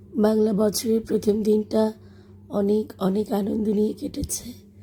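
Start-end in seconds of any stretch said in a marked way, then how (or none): 2.4-4.5 broken, weak voice fading to a whisper. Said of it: "আমার কণ্ঠ একেবারেই ভেঙে গেছে".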